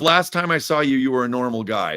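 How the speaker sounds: plain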